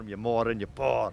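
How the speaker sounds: loud put-on Scottish brogue. Saying a phrase the way they'd have to do it: put-on scottish accent. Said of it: "I'd put a Scottish accent on if I did it".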